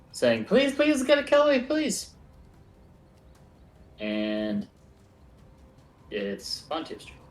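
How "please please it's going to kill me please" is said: shrill, very high, very loud, desperate screaming plea. Narrating the game, voicing a woman behind the trees: woman's voice screaming. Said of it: "you hear a woman's voice screaming".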